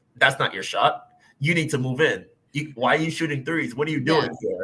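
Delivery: put-on blunt, direct, matter-of-fact tone. Imagining a player trash talking a shooter: Leo trash talking, blunt and matter-of-fact. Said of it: "I could just imagine Leo being like".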